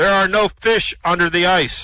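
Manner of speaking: slow, loud booming voice. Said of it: "Again, he hears this booming voice".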